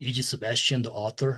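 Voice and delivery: low-pitched voice. Retelling a phone call where a caller asks for him: deep voice. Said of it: "this deep voice is like".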